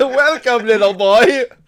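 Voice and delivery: loud, high, belted delivery. Telling someone how not to approach them, in a Happy Mask Salesman voice. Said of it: "like you're the happy mask salesman, man with a pita voice".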